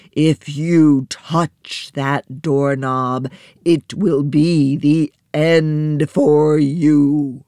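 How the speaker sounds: big storybook giant voice, drawn-out "you". Narrator reads the giant voice warning her as her hand reaches out, booming. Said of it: "it warned her in its booming voice".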